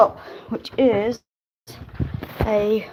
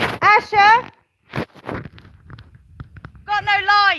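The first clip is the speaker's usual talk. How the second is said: very high, shrill, loud, carrying shout; 11 semitones higher, 4 dB louder than usual. Finding no barn lights on, the speaker calls out to Asher; shouting. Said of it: "I need to shout".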